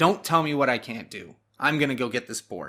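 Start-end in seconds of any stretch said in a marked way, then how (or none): none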